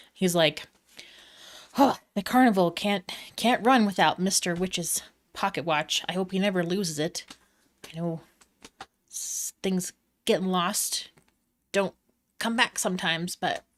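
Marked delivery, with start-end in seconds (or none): 1.8-13.6 muttering under the breath, slower. A carnival character waits for more patrons, muttering to himself. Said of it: "starts muttering to himself".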